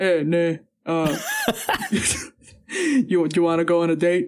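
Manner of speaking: very slow, swooping sing-song voice. Retelling what a housemate said to a girl: imitating Yuya. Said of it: "keep doing that impression".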